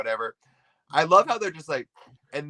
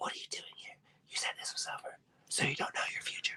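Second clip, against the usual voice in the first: very quiet, breathy, barely voiced hushed whisper. Retelling a game scene where Lita suddenly whips around, imitating Lita's whisper. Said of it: "She's sort of whispering".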